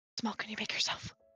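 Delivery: whispering into hands. Sending a secret message to Boone to keep things quiet: whispering into hands. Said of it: "I will kind of whisper in my hands".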